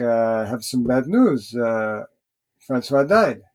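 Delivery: put-on French-Canadian-accented delivery. Speaker retelling what a man told him, in a French-Canadian accent. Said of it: "in this, you know, French-Canadian accent".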